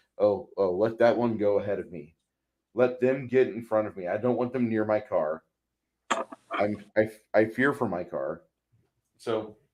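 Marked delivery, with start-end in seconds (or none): none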